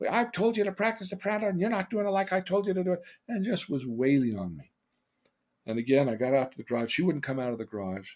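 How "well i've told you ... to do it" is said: mock, shrill, very high screaming. Retelling what a mother yelled during a beating: imitating someone screaming. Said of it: "she's screaming at me".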